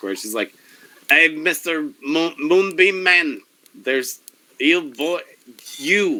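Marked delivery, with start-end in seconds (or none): 1.1-6.2 high-pitched, loud, carrying yell. Voicing an innkeeper character calling out to a player: yelling across a town square. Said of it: "she just yells across the town square".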